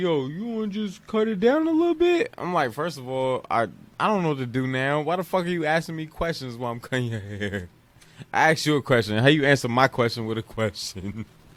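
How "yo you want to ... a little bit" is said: very high, questioning upward lilt throughout. Retelling how Charles talks while getting his hair cut, imitating Charles's questioning tone. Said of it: "it sounds like he asking questions".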